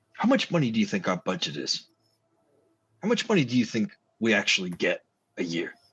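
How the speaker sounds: mock fed-up, frustrated, exasperated tone. Voicing a frustrated cop asking about the station's budget: frustrated. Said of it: "he looks frustrated for a minute".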